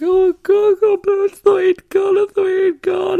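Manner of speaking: very high, drawn-out sobbing wail through tears. Retelling crying in a woman's hug, acting out sobbing in tears. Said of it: "I just couldn't stop crying".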